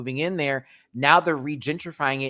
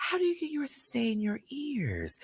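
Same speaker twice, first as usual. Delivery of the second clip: very high, very soft little voice; 10 semitones higher, 7 dB quieter than usual. Retelling what the woman taking the speaker's blood pressure asked: imitating her very soft voice. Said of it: "She has this very soft voice".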